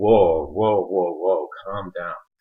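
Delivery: acted, startled, shocked whoa, backing-off tone. Retelling a group's reaction in a comic: imitating shocked people. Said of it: "all of the group was shocked".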